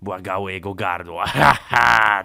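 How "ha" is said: loud, gloating, victorious, triumphant ha. A narrator voices the germs marching into a throat, triumphant. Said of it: "triumfowały bakterie".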